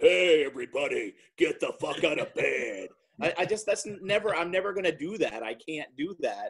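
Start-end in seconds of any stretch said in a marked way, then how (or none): 0.0-2.9 larger-than-life, big, overpowering morning radio DJ voice. Joking about the voice radio hosts put on: big radio host voice. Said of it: "I'm not blessed with that big".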